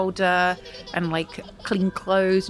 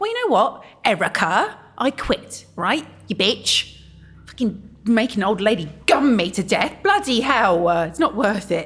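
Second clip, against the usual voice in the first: exasperated, had-enough ranting; 2 semitones higher, 4 dB louder than usual. Speaking to Erica: fed-up rant. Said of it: "I think [name] is fed up".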